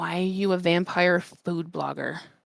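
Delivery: soft, hushed half-whisper in character voice. Leaning down to ask another character a question: half-whispering in character. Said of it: "kind of, like, whisper".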